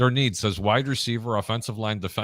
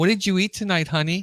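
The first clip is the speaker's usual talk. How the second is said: voice pitched very high; 9 semitones higher than usual. Imitating what his mother will say on the phone: imitating his mother. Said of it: "She's gonna say".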